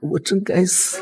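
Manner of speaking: high, weeping, tearful crying voice. Apologizing to a partner who says stop crying: crying. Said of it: "别哭了。".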